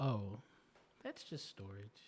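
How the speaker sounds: knowing, matter-of-fact, slow and sing-song. Quoting what a woman says, imitating her knowing, matter-of-fact tone. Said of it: "she says it in a in a knowing way ... matter of fact".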